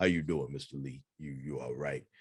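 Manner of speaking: mock big, low voice. Recalling a big fella named Ed who called him Mr. Lee, Ed's deep voice impression. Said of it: "Ed had a deep voice".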